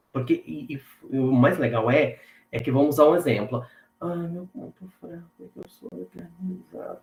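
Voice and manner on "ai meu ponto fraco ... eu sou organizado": acted, hushed, tearful, very quiet, pitched-up voice near crying. Imitating a person asked for their weak point: imitating someone near tears, voice lowered. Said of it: "Daí a pessoa já vai chorando".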